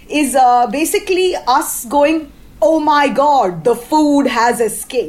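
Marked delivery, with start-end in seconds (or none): none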